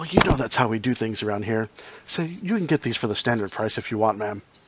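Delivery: hushed, confidential, leaning-in half-whispered aside. A game master voices a character leaning in to half-whisper to a player: leaning in, half-whispering. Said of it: "leans in and whispers to you".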